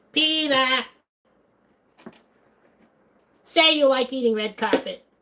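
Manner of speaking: very high cartoon housewife voice. Showing off impressions, the speaker does a Lois Griffin impression. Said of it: "Can I do a Lois Griffin impression?".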